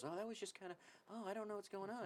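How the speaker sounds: hushed, very soft, meek, timid voice. Retelling what another guy said after someone cut the line, imitating a timid guy. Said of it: "he was very timid".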